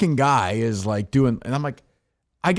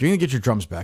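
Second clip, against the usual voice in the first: angry, mad voice; 2 semitones lower than usual. Retelling telling a drummer about his drums: retelling own angry words. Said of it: "I'm getting so mad".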